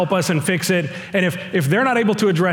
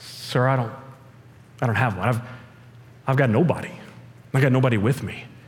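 acted defeated voice, pitched lower; 7 semitones lower, 5 dB quieter than usual. Retelling a woman's answer when asked about her husband: acting out a defeated reply. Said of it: "you can almost hear the defeat in her voice".

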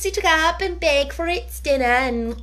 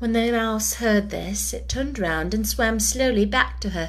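usual speaking voice

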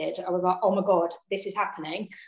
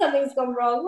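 put-on panicked hissy fit, higher; 6 semitones higher than usual. Retelling a moment in labour, imitating own past panic in a hissy fit. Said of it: "throwing a hissy fit".

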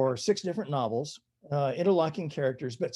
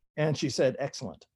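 ordinary talk

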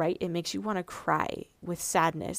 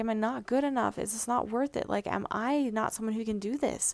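acting out tearful crying; 3 semitones higher than usual. Recounting a desperate moment from the past, imitating crying. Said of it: "and then crying like".

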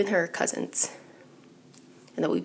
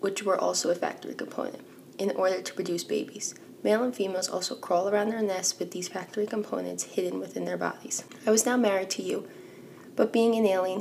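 normal talking voice

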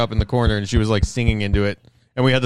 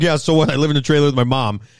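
completely earnest, dead serious, matter-of-fact, acted; 3 semitones higher than usual. Retelling how another speaker said a line: imitating someone dead serious. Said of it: "it's just how he said it, so serious".

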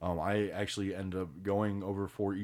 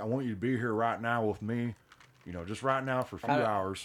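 put-on Southern-accented voice; 3 semitones higher than usual. Playing someone talking to Mary, in a Southern accent. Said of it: "Why do we get Southern?".

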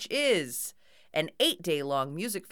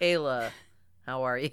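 mock-disappointed voice, much lower pitch; 6 semitones lower than usual. Speaker teases the other speaker about how they greeted Kayla: mock-disappointed voice. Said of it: "you just said kayla in your disappointed voice".

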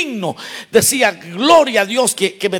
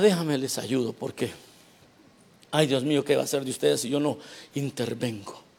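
smug, condescending, patronizing voice; 7 semitones lower, 12 dB quieter than usual. Imitating a proud helper who talks down to the brothers: imitating a condescending helper. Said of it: "I'm being condescending".

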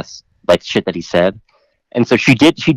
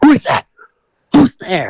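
mock screaming, much higher pitch; 9 semitones higher, 3 dB louder than usual. Speaker retells a paranoid man hearing them come downstairs, imitating someone screaming. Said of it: "was screaming".

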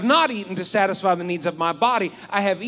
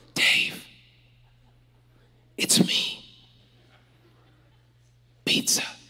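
faint, hushed, slow, drawn-out whisper. Retelling leftover pizza calling from the refrigerator at night: imitating pizza's faint whisper. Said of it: "I hear a faint whisper".

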